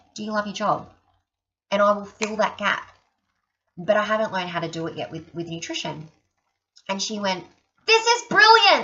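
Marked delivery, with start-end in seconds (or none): 7.8-8.8 very high, loud put-on American accent. Retelling what a woman said to her, in her American accent. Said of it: "This is brilliant in her American accent".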